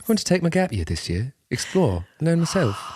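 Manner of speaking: posh European schoolboy voice. Mocking the idea of a gap year, playing a european boarding school boy. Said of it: "like, European boy from boarding school".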